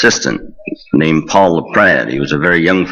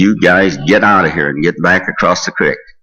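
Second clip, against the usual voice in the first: firm, stern, no-nonsense commanding tone. Retelling walking up to the jail, the speaker acts out Uncle Roy's stern, loud order. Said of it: "in a very stern and loud voice".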